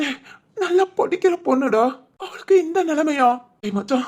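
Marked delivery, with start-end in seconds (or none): 0.6-3.3 high-pitched tearful crying. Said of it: "நடு ரோட்ல நின்னு அழுதுகிட்டு இருக்க".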